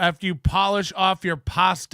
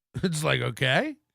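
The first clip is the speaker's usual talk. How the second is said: normal talking voice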